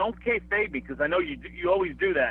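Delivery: ordinary talk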